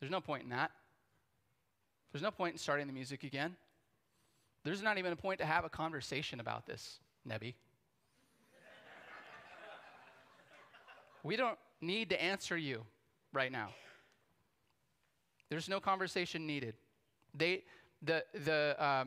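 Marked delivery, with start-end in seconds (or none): 0.0-16.7 put-on blunt, flat, unyielding tone. Retelling the three men's answer to the king: imitating the three men refusing. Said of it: "these guys are like".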